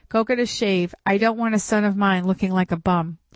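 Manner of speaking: ordinary delivery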